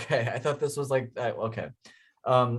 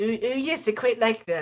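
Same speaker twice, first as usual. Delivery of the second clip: put-on much higher cartoon-baby voice; 10 semitones higher than usual. Trying to impersonate a Family Guy character: Stewie Griffin impression. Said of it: "That was actually pretty good".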